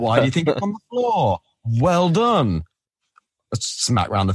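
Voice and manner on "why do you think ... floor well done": put-on sassy voice, higher. Retelling how Ichigo questions skaters who knocked flowers over: sassy Ichigo voice. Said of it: "but he does it in such a sassy way".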